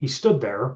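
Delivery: plain reading voice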